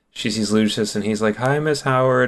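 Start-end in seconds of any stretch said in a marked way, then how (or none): 1.4-2.3 mock bashful, hesitant, timid little voice. Retelling a book scene where Lucius greets Miss Howard: imitating Lucius timidly. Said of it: "more timid".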